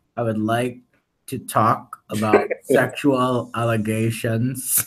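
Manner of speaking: slow, disguised, anonymous voice-changer voice. Mocking another speaker who hides his voice from the mic: imitating a disguised voice. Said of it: "He's like this".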